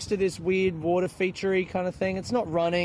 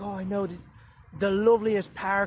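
put-on Irish accent. Retelling a park visit with a friend, imitating Josephine, Irish accent. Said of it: "I just have one Irish accent".

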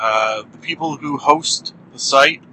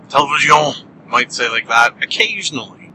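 ordinary talk, nothing marked

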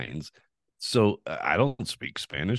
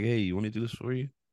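put-on sweet, very polite, friendly, nice tone; 5 semitones higher, 4 dB quieter than usual. Retelling an offer to help with the car, imitating own very nice tone. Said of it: "I was trying to be very nice".

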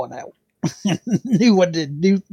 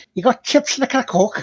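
put-on Scouse accent, pitched up; 7 semitones higher than usual. Speaker demonstrates how to sound like a Scouser: Scouse accent. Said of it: "if you want to be a Scouser".

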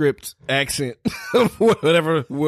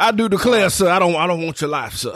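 higher, southern-accented cartoon rooster voice; 3 semitones higher than usual. Asked what a movie character says, the speaker quotes him in a Foghorn Leghorn voice. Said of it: "that's Foghorn Leghorn".

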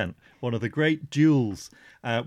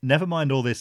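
ordinary talk

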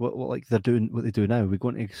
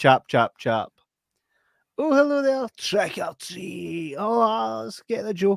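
lively, high, animated performing patter; 10 semitones higher, 4 dB louder than usual. Retelling own old trick-or-treat routine at the door: imitating own younger self. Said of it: "what I used to go and I'd be like".

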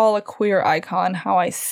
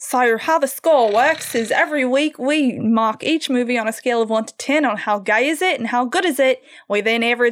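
attempted Australian accent. Trying out an Australian accent to explain how the score works. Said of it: "I'm gonna try out my Australian accent for this one".

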